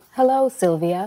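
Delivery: robotic voice. Greeting a newcomer as a talking box: robot voice. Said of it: "a robot voice in a box".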